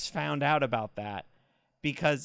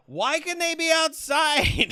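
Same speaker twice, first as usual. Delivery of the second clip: blurted, shrill, very high, loud acted yell; 14 semitones higher, 6 dB louder than usual. Retelling a question yelled to a date in a loud theater: retelling own yell. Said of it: "it got quiet right as I yelled".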